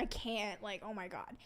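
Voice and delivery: mock-panicked voice. Recalling a moment of panicking, retelling past panic. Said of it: "panicking because I'm like".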